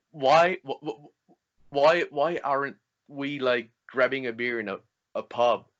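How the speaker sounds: slow, halting stutter, stuck on w sounds. Retelling what a moviegoer said after a screening: imitating someone stuttering.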